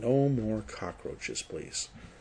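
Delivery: very quiet, low, hushed murmur under the breath. Voicing Faradin after the cockroach encounter: speaking very quietly. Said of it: "He's doing this really, really quietly".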